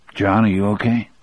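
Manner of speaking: ordinary delivery, nothing marked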